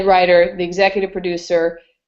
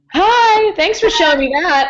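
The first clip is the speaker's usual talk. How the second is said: very high, tearful voice, crying while talking; 12 semitones higher, 4 dB louder than usual. Thanking the host for showing an old clip, crying while talking. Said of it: "I'm already crying".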